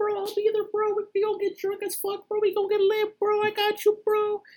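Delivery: very high, squeaky cartoon mouse voice. Retelling what a coworker promised before not showing up: imitating Roger. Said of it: "Mr. Mickey Mouse voice and everything".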